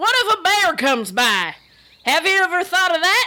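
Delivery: folksy rural country character voice. A red-shirt crewman answers a crewmate, in a country crewman voice. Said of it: "He's from the countryside of the planet".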